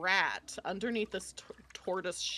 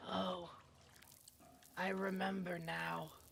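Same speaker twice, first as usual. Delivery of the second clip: solemn character voice, much quieter, slower; 11 dB quieter than usual. Narrating a scene, the speaker voices Grack as he is handed the nunchaku: solemn. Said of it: "he looks very solemn".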